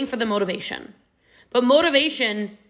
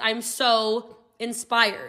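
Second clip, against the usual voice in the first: plain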